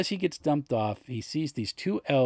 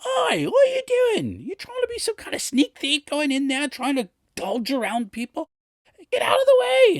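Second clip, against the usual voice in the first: very high, shrill, annoyed top-of-lungs yell, woman's voice; 5 dB louder than usual. Retelling how a woman yelled at a man trying to follow them, imitating a woman yelling. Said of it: "is yelling at the top of her lungs".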